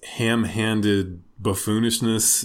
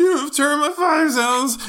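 put-on cracking teenage voice, higher and louder; 5 dB louder than usual. Acting out a teenage spaz out clearing the temple: teenage Jesus, voice cracking. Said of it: "his voice is cracking".

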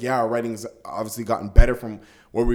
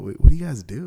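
mock whispering; 3 semitones higher, 5 dB louder than usual. Retelling how people ask as if it's a big secret: imitating someone whispering. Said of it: "you don't have to whisper".

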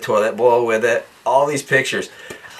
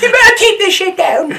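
put-on British accent, much higher, louder; 8 dB louder than usual. Retelling an older couple next door at a hotel complaining, put-on British accent. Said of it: "Sorry for my British accent".

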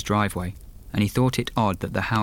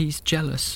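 whispering between sobs, much higher pitch; 7 semitones higher than usual. A hurt woman answers a man asking who did this; whispering between sobs. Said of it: "she whispered between sobs".

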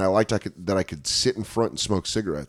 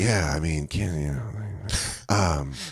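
low, soft, sleepy, half-asleep mumble. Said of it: "always is talking like he's falling asleep, but he's trying to act like he's not sleeping".

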